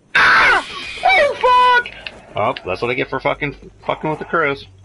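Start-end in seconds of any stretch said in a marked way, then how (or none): 0.1-1.9 panicked yell, much higher, louder and slower. Startled by crows right after pushing a button, panicked yelling. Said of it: "Oh, calm down".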